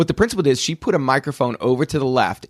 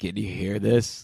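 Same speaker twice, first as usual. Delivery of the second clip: low, deep, sick-sounding voice; 6 semitones lower, 6 dB quieter than usual. Imitating someone narrating while sick: imitating her deep sick voice. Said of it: "This is exactly how she did it".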